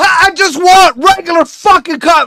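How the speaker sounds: shrill, ear-splitting, very high, very loud scream. Retelling asking a woman for a plain cup of coffee, retelling a scream. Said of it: "Like I screamed at her".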